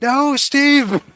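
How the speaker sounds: very high, shrill, loud yelled shout.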